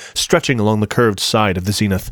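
plain reading voice

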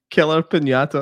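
laughing through the words. Naming the movie they are about to watch, laughing while talking. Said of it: "can't even say it without laughing".

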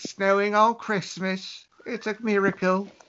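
put-on English accent. Joking along with the others, putting on an english accent. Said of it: "your English accent".

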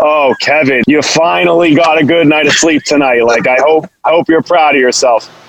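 sarcastic, disparaging voice. Speaker imagines how his sleep tracker would talk to him, in a mock-sarcastic Oura Ring voice. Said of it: "in like a sarcastic, disparaging tone".

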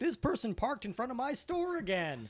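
very high, swooping put-on Southern Midwestern accent. Acting out an old person complaining to the sheriff: imitating a Southern Midwestern accent. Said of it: "they suddenly have a Southern Midwestern accent".

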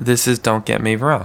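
flat, unenthusiastic. Finally doing the show intro after a co-host's prodding, flat and unenthusiastic. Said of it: "you sound excited about that one".

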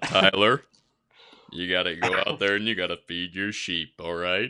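deepest bass voice, very loud and booming. Podcast host impersonating someone's dad, imitating a very deep voice. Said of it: "I always like to impersonate it".

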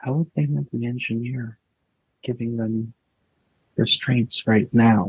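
barely audible whisper. Voicing a character spacing away, whispering to herself, almost audibly. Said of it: "whispers to herself, kind of, almost loud enough to hear".

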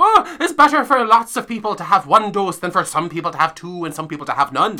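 put-on Irish accent, accurate and held throughout. Quoting what a woman said, in an irish accent impression. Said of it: "that is Irish".

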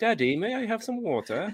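put-on very high posh British accent. Imitating someone who picked up a British accent from YouTube: posh British accent. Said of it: "I'm talking like the Queen's English British".

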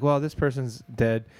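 plain

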